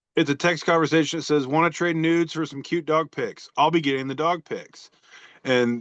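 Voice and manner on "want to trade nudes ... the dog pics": ordinary talk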